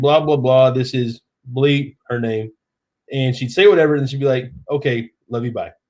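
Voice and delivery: ordinary talk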